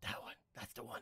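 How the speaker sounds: breathy, very quiet, barely audible whisper. Confirming to another speaker which one they are working on, whispering. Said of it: "Why are you whispering?".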